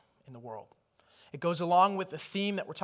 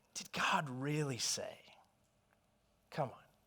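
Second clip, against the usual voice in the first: quiet, slow whispering; 3 semitones lower, 11 dB quieter than usual. Retelling how the enemy tempted, imitating a whisper. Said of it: "he whispered".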